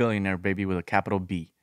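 ordinary talk, nothing marked

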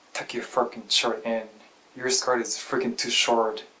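ordinary delivery

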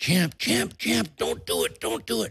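high but mild put-on scream. Retelling how a brother stopped him with a warning: imitating someone screaming. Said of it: "he screams at me".

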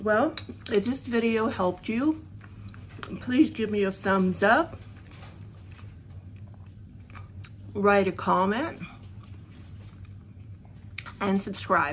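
talking through a mouthful, chewing. A cooking video host signs off to viewers, talking while chewing. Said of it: "Sorry, I'm chewing".

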